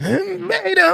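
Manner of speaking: strained, very high, drawn-out scream. Showing how to scream 'beta': strained JLP scream of 'beta'. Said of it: "When you scream beta like J L P, you have to sound like you straining on the toilet".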